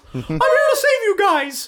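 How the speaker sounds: squeaked out, swooping up very high. Voicing a character during a group retelling: Mickey Mouse voice. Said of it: "He's apparently Mickey Mouse, too".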